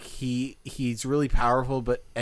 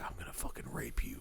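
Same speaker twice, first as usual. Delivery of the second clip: very hushed, creepy whisper close in the ear; 13 semitones lower, 14 dB quieter than usual. Describing a creepy villain who whispers threats into people's ears: creepy villain's whisper. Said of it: "he just will whisper in people's ears like".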